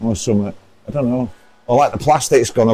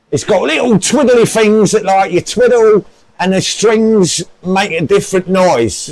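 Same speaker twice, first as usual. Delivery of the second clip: fake, higher-pitched London Cockney accent; 8 semitones higher, 4 dB louder than usual. After being told to use the accent, speaking in a put-on Cockney accent. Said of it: "put on that Cockney accent that you often use".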